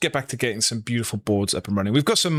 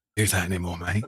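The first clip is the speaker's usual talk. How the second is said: acted-out whisper, lower in pitch; 4 semitones lower, 4 dB quieter than usual. Acting out telling an opponent a card is not legal: acted-out whisper. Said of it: "just gonna whisper in, in their ears".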